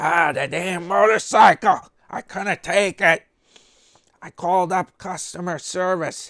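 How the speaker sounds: put-on angry raspy rant. Imitating a man yelling angrily in a video: mock-angry raspy yelling. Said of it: "He was all he was all mad".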